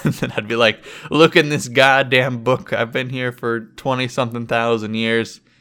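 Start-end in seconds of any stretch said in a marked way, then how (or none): none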